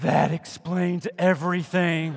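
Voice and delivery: whisper, not very quiet. Speaker retells a remark that was whispered to him, loud stage whisper. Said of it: "whispers to me, not very quietly".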